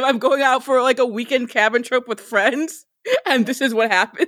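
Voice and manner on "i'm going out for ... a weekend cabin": ordinary delivery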